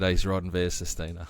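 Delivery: ordinary talk, nothing marked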